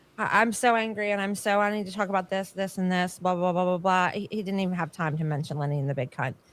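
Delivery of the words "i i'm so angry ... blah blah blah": ordinary delivery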